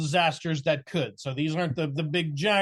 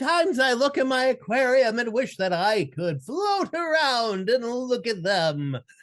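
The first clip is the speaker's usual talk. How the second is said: put-on high, sing-song eager enthusiast character voice; 7 semitones higher than usual. Trying out a character voice he is working on: aquarium enthusiast voice. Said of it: "my aquarium enthusiast uh, voice".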